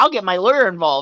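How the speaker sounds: cocky, superior, smug, self-satisfied tone. Retelling what she said when threatening, imitating someone speaking smugly. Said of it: "was so smug when saying".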